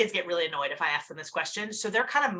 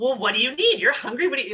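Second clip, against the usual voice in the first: loud, mocking, insincere sarcastic tone; 4 semitones higher, 5 dB louder than usual. Showing how not to ask a hungry child: sarcastic asking demo. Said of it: "You can't ask this sarcastically".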